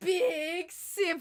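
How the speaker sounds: voice cracking high on big simp. Trying to pronounce a name, voice crack. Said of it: "That voice crack".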